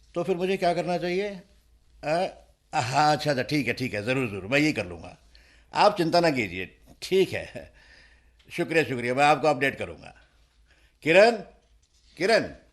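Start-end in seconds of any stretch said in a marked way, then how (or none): 11.1-12.4 loud, pitched-up calling shout. A man calls out for someone right after a phone call, shouting. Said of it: "तुम चिल्ला क्यों रहे हो?".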